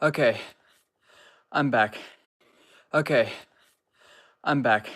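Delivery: breathless, winded, still catching breath. Speaker coming back to viewers after stepping away, out of breath. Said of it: "I'm still out of breath".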